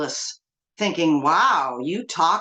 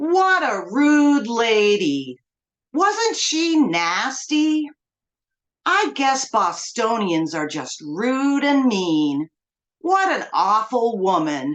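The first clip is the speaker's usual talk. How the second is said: put-on condescending baby talk, toddler-style; 3 semitones higher than usual. Retelling a stranger's remarks on a train: imitating a voice for a two-year-old. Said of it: "in a voice you'd use to speak to a two-year-old".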